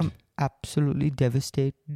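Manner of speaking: airy put-on Scandinavian accent. Retelling what a man said, in his accent: imitating his Scandi accent. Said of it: "you got his accent really well".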